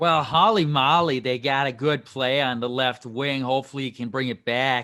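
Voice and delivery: Boston way of speaking. Answering co-hosts' question about a player's signing, in a boston accent. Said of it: "I just wanted to say Hall in a in a Boston accent".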